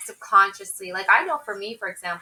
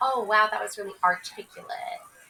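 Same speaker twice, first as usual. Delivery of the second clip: imitated sarcastic tone. Imitating people who sarcastically praise how articulate someone sounds: imitating a sarcastic compliment. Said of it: "sarcastically say".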